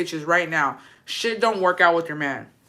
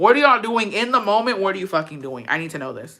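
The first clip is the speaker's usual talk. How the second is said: ordinary talk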